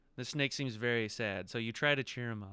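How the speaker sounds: usual speaking voice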